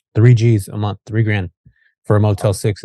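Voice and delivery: ordinary talk, nothing marked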